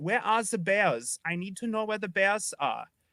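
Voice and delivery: clichéd stock German accent. Showing the other speaker how a german accent is stereotyped; stereotypical german accent. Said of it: "stereotypical German accent".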